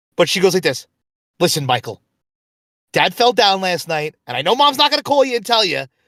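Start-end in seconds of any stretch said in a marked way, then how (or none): 1.4-5.9 put-on New York accent. Speaker imitates his sister telling him news about their dad, New York voice for his sister. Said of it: "I always give her this voice".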